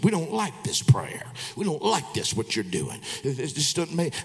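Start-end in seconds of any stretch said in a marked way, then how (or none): 0.0-3.0 put-on, altered devil voice. Retelling what a man said during prayer: imitating a changed voice. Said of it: "His voice changed".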